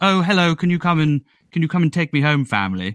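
put-on posh, prim, very British accent. Describing how the bear from Peru talks, Paddington Bear's British accent. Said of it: "so his accents like".

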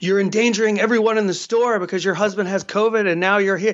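plain

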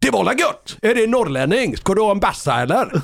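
put-on Gothenburg accent. Retelling what a man said on hearing the speaker is from Umeå, Gothenburg accent. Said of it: "så nu kommer min göteborgska".

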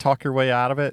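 plain

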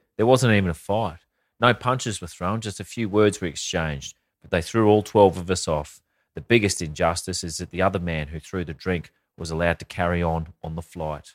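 plain

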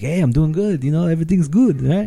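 put-on, laid-on Italian accent. Retelling a movie scene, quoting the sheriff: Arnold Schwarzenegger impression, Italian accent. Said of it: "he has an Italian accent".

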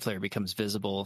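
normal talking voice

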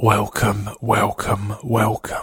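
hushed, quiet whisper. Host opening a secret birthday podcast episode, whispering. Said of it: "The reason I'm whispering".

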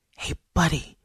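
mock conspiratorial whisper. Goldie sneaks up on an enemy soldier and calls to him: mock conspiratorial whisper. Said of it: "Goldie said in a mock conspiratorial whisper".

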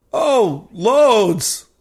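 gasping, sarcastic tone. Narrator answers the tech's question about the air, gasping and sarcastic. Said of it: "I say, gasping".

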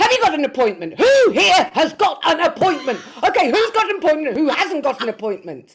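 very high, very loud, shrill, angry bellowed shouting. Retelling how the angry woman in charge yelled at everyone; imitating someone shouting. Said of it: "she just started shouting from the off".

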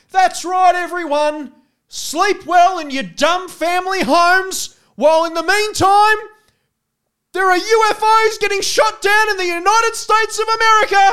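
very loud, high, full-lung bellowing scream. Retelling a man who passed by screaming at everyone, imitating a man bellowing. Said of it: "screaming at the top of his lungs".

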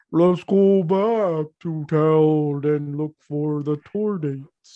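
voice of a living balloon creature. Restating a plan to the group in character, Balloonitas voice. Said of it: "But I say that in Balloonitas form".

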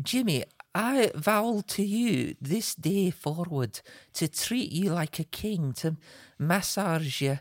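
a slow, bad Scottish accent laid on thick. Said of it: "that is the worst Scottish accent I've ever heard".

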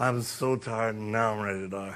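put-on low, worn-out, very old man's voice.

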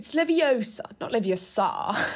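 put-on posh, plummy upper-class British accent. Asked to do voices, you try out the nice goody two shoes one in a posh Hermione voice. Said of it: "posh Hermione".

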